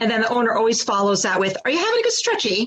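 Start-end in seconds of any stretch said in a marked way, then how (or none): 1.6-2.7 high-pitched fake English accent. Speaker imitates a dog owner talking to their stretching dog, in an english accent. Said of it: "in an English accent".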